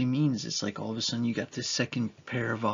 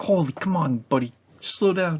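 put-on high, raised, paranoid, fretful, anxious voice; 5 semitones higher, 6 dB louder than usual. Speaker recalling driving with a new baby in the back seat, acting out paranoid self. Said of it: "all of a sudden I'm like paranoid of everything".

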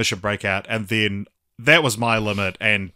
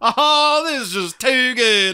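put-on loud, high-pitched Southern accent; 5 dB louder than usual. Quoting a film villain's final line: Syndrome's random Southern accent. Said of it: "a random Southern accent for the, that final Too Good".

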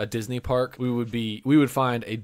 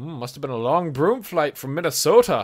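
put-on British accent; 4 semitones higher, 4 dB louder than usual. Retelling what a shop worker said to him: imitating a British accent. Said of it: "he said it with a British accent".

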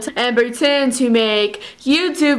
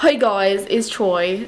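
clumsy, very bad fake Australian accent; 3 semitones lower than usual. A 'hey guys' greeting, done in the worst fake australian accent. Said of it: "That was the worst Australian accent I've ever done".

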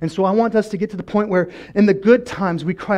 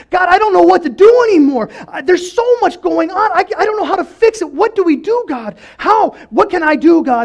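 desperate, pleading, very high, loud shout; 11 semitones higher, 7 dB louder than usual. Telling of a man whose rituals are not working: acting out shouting to God. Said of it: "he starts shouting out to God".

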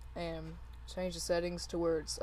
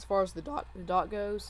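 voice cracking, louder and slower; 4 dB louder than usual. Explaining how the dock works mid-tutorial, your voice cracking. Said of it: "my voice is cracking".

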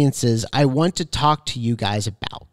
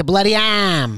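put-on New England accent, pitched up; 5 semitones higher than usual. Recalling a man who read The Bloody Arm to him as a child, New England accent. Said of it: "I think it was like a New England accent".

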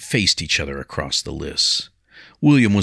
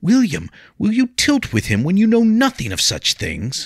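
exasperated, frustrated, very high, swooping pleading; 3 dB louder than usual. The narrator reads Leah pleading with William as he turns away, frustrated, angry pleading. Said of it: ""When you are finished fawning over the Lady [name]".

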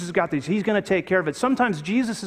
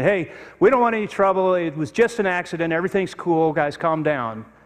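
plain

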